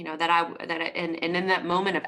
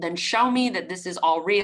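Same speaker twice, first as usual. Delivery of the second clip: ordinary talk, nothing marked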